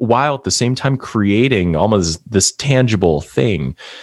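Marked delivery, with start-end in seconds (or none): none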